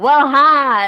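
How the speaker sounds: put-on loud Southern accent. Retelling how another player greeted the table: imitating a loud southern greeting. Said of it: "it was very loud".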